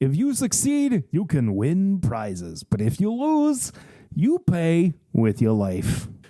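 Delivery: bad, hammy carnival-host Brooklyn accent, laid on thick. Reading a story aloud, voicing the carnival's host Big Al, bad Brooklyn accent. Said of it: "you did like a bad Brooklyn accent".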